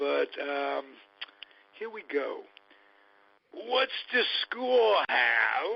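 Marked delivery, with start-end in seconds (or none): 3.5-5.8 put-on old New York accent, loud and pitched-up. Introducing the next host with a favorite catchphrase: old New York accent. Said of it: "put on my old New York accent".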